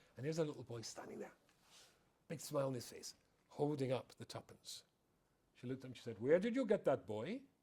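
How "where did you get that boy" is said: put-on stern Welsh accent, pitched higher. Telling a childhood story, the speaker voices the boy's mother questioning him: welsh accent. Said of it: "in her Welsh accent".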